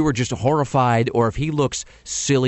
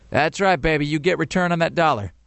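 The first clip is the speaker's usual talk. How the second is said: mock deadpan, flat, uninspired monotone, zero enthusiasm; 4 semitones higher than usual. Retelling what she said, the speaker imitates her in a mock flat, uninspired tone. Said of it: "in the most flat, uninspired tone ever".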